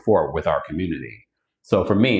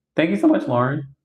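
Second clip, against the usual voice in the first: high voice cracking and breaking on the words; 8 semitones higher than usual. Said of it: "Why did my voice crack?".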